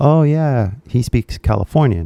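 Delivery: normal talking voice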